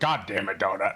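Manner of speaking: put-on thick, very rough, rough-edged American accent. Imitating how the audiobook narrator voices Carl: imitating a very rough American accent. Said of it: "A very, very rough, uh, American accent".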